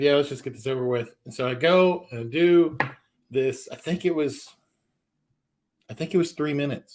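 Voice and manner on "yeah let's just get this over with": ordinary delivery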